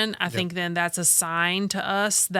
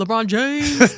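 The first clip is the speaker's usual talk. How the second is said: very loud, high-pitched shout; 5 semitones higher, 8 dB louder than usual. Repeating on request how Leah says the name when shooting: imitating Leah. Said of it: "That's how she says it".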